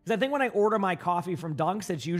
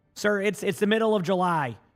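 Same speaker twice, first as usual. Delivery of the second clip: usual speaking voice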